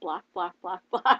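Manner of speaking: put-on chicken-like clucking. Acting out the universe offering the speaker things: clucking like a chicken. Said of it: "I sound like a chicken".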